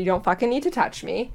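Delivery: put-on snapping tone. Retelling what they said to a security guard who touched them, retelling a snap.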